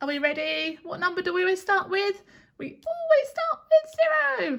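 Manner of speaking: high, squeaky little mouse voice. Leading a counting exercise starting from zero, in a squeaky mouse voice. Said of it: "try doing it in a squeaky mouse voice".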